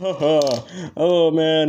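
talking through laughter. Slowing down during a chase with a plan in mind, laughing while talking. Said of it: "I'm laughing".

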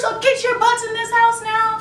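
loud, hollered scolding yell. Speaker retells a woman yelling out her window at the kids, retelling a scolding yell. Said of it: "it was just yelling".

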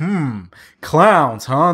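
put-on sarcastic voice. Retelling the cop's reply to the fifth clown call: imitating a sarcastic cop. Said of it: "he was just saying every line so sarcastically".

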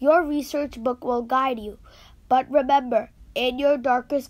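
ordinary delivery, nothing marked

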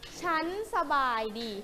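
slow, clear, carefully articulated delivery.

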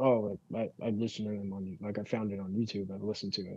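very quiet, soft mumbling voice. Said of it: "like, very quietly".

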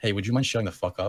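plain

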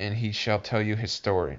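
plain

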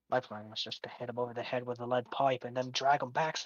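whispering in character voice. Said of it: "he's gonna lean and whisper this".

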